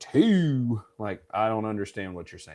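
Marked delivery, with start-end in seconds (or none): 0.0-0.8 loud, high southern drawl stretching out "two". Telling a story, showing how they can count in a southern accent. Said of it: "I can say them in a southern t-".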